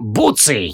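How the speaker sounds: sudden, angry barked outburst. Kleventin drags another sorcerer out from behind a pipe, barked. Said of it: "рявкнул Клевентин".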